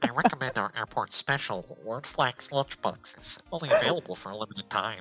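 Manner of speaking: put-on nasal cartoon voice. Voicing the lunch lady offering the airport special: Squidward-like voice. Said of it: "I like that she sounds like Squidward".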